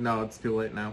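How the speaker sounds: usual speaking voice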